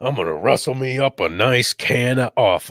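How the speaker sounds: put-on Wild West cowboy voice. Asked how cowboys talk, the speaker tries a line in cowboy voice. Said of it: "how do cowboys go?".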